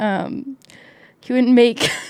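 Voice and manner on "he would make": giggling through words, higher and louder. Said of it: "sorry, I don't know why".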